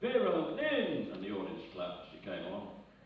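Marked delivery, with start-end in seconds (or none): 0.0-1.1 high, loud, slow, effusive and gushing. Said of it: "Ernie very effusively said".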